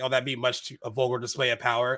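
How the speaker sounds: normal talking voice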